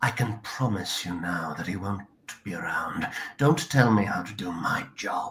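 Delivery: put-on, deep family patriarch voice. Narrating a story aloud, voicing the family patriarch in a character voice. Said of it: "I'll just do a voice".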